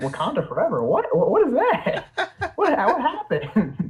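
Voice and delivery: put-on, baffled tone.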